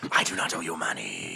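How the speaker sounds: whispered creature voice. Voicing a creature that whispers inside a player's head: creature whispering telepathically. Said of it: "You hear the creature whisper in your head".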